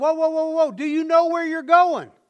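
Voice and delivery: high-pitched, loud, alarmed yell.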